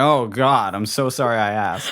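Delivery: mock apologetic voice. Retelling the driver's reaction after the vomit: imitating the apologetic driver. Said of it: "And he's like".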